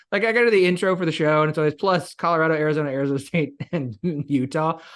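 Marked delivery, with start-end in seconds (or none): 1.7-4.7 words broken up by laughter. Reading the show's intro list of Big Twelve teams, laughing while talking. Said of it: "I have yet to stop laughing when I say it".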